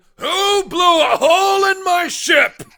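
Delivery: very high, loud, furious angry yell. Narrating a scene, the storyteller voices someone from up top, yelling. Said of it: "you hear a voice yelling".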